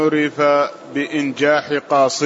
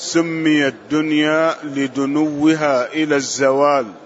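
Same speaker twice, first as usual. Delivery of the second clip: normal talking voice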